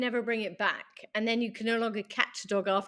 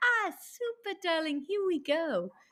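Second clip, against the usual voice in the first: super nice, super-sweet voice, pitched up; 7 semitones higher than usual. Retelling how a trainer praised a returning dog: imitating a super nice voice. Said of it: "his voice would change to, like, super nice".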